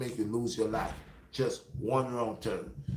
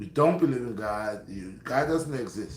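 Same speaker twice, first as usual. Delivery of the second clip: usual speaking voice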